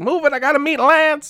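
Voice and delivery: very high-pitched, squeaky voice. Act out James Hong pushing your girlfriend out of the way, in a Lo Pan voice. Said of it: "it sounded exactly like Lopan".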